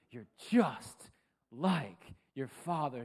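play-acted, deeply exasperated tone. Recalling a woman's repeated remark to him, speaker imitates her exasperated tone. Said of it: "It was always in a very exasperated tone".

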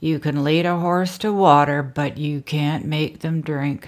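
slow drawl, every word drawn out. Quoting the broker's remark, in an Eeyore drawl. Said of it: "in his Eeyore drawl".

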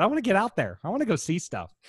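put-on very high, sing-song, swooping little-kid voice. Talking about a planned road trip, the speaker repeats his wish: little kid voice. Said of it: "now I sound like one of those little kids".

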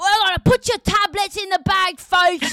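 very high, loud, aggressive put-on British accent. Describing how some people talk and imitating them, imitating aggressive British accent. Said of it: "really aggressive British accent".

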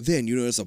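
plain

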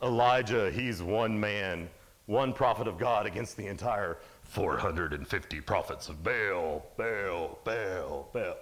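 hyped-up monster truck commercial announcer voice. Retelling a Bible scene as a monster truck commercial: monster truck commercial announcer. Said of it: "Like the monster truck commercials?".

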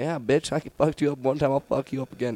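put-on drunk taunting. Retelling a drunk fight taunt at a bigger opponent: retelling own drunk trash talk. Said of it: "fucking talking mad shit".

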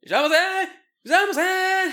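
piercing, shrill, very loud high-pitched scream. Imitating store staff greeting someone who walks in: imitating store staff screaming. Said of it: "Everyone's screaming at you".

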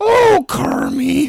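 very high-pitched, loud puppet voice. Friends taking Muppet roles, one tries the Miss Piggy voice. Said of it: "does she sound like?".

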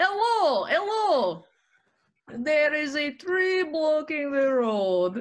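put-on Russian accent, high pitched and slow. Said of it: "Can you say it?".

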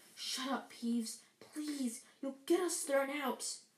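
usual speaking voice

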